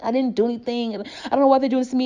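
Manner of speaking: mock distressed, high, upset voice on verge of tears. Describing a video of a homeless man facing police, imitating someone almost crying. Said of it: "He's really upset and like almost crying".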